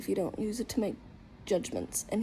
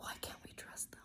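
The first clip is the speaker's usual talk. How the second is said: hushed, very quiet, breathy, barely-there whisper. Reacting to a warning about who to trust: whispering. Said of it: "Why am I whispering?".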